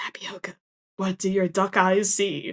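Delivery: hushed, secretive, voiced stage whisper. A player's character picks up the duck Tapioca and asks it something, whispering. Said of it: "I pick up Tapioca and I whisper".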